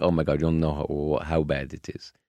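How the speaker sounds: ordinary talk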